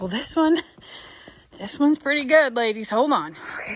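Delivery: breathing heavily. Sharing a TikTok tip with viewers, heavy breathing. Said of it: "excuse my Darth Vader-ness".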